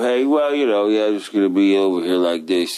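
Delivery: droopy, lazy, slack-jawed voice. Complaining about people who talk lazily, imitating a droopy lazy voice. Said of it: "the droopy voice".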